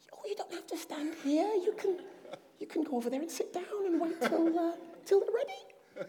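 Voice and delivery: high, unvoiced stage whisper.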